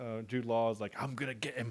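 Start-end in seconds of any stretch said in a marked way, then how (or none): 1.0-1.7 hackneyed, put-on Southern English accent, quieter. Retelling a film scene, hackneyed southern english accent. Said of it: "Southern England, like that hackneyed".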